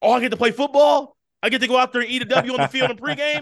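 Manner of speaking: high, playful, a little sarcastic hype. Imitating a quarterback who is offered the chance to play: sarcastic Jameis impression. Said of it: "being a little sarcastic".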